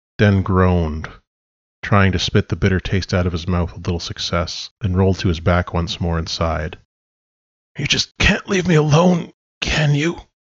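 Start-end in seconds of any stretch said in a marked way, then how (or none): 7.8-10.2 croaked, pitched high. A man lying on his back addresses someone, croaked. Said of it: "he croaked".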